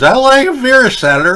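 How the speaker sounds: very high, slurred put-on voice. Quoting a man later given a Supreme Court job, imitating slurred words. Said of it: "this guy's like slurring his words".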